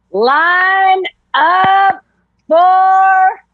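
very high, loud called-out shout. C.O. Miller strides to the bottom of the stairs and shouts out. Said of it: "strides to the bottom of the stairs and shouts out".

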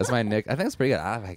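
voice talking through a forced smile. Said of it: "I'm talking like this right now".

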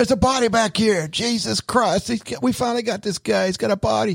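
put-on high, shrill screaming yell. Retelling popping a car trunk during a joke: imitating own past screaming. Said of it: "we started screaming".

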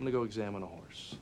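low, dry, flat deadpan. A man ends an argument with Carrie, delivering his parting line deadpan. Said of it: "I love the way he deadpans that at the end".

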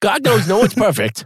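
joking fake Boston accent, very high pitched. Repeating another speaker's remark as a joke: silly put-on Boston-like accent. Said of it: "Why did I make that accent?".

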